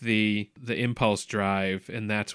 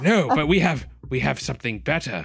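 put-on English accent, much higher pitch; 3 semitones higher than usual. The speaker retells a character's reply in a story, Reed accent. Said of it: "What accent is this?".

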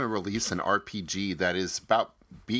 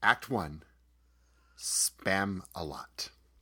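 nasal radio-host voice, a touch deeper; 4 dB quieter than usual. Having just found the right voice, announce act one in an Ira Glass voice. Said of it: "there we go".

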